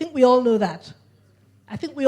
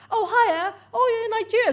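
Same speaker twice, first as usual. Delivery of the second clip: put-on British accent, higher pitch; 12 semitones higher than usual. Retelling meeting an English guy in a lift: imitating a British accent. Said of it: "It was a British accent".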